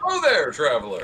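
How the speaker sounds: pleasant, good-humored tone. A game master voicing a giant greeting a traveler, jovial voice. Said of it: "Jovial voice".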